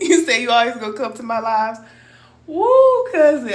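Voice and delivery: laughing while talking. Thanking a cousin who promised to always come to the lives, laughing while talking. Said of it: "I can't stop laughing".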